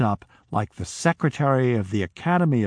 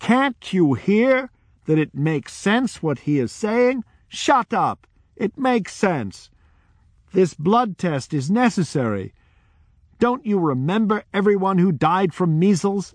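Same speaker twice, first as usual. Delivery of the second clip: put-on loud raised voice, pitched high; 8 semitones higher than usual. Retelling a barefoot woman from the crowd addressing everyone, retelling someone speaking loudly. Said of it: "and in a loud voice said".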